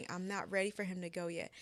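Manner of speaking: usual speaking voice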